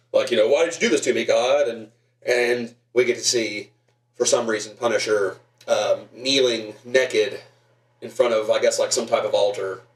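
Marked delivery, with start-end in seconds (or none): 0.4-1.6 heavy rasp throughout the whole line. Retelling the Punisher's monologue to God from a movie: raspy Dolph Lundgren voice. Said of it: "raspy Dolph Lundgren voice".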